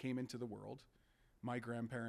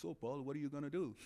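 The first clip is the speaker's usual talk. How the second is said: put-on Italian accent in an old grandfather-like voice; 3 semitones higher than usual. Retelling what the grandfather said to the speaker's dad, in his Italian accent. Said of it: "in his Italian voice and said".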